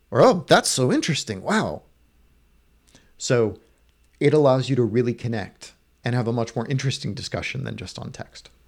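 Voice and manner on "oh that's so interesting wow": openly sarcastic, swooping drawl with fake interest. Speaker showing how sarcasm comes through over voice, sarcastic. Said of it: "You could sound sarcastic".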